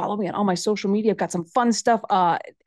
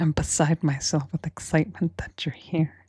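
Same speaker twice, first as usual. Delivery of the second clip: low put-on public-radio host voice; 4 semitones lower, 3 dB quieter than usual. Welcoming a guest on a podcast, joking in an NPR voice. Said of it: "did the entire episode like this".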